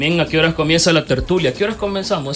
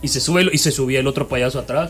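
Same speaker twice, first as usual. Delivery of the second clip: usual speaking voice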